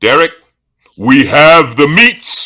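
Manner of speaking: booming ad-style announcer voice. Doing the fast food slogan: Ving Rhames voice. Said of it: "the voiceovers that Ving Rhames does, which is Arby's".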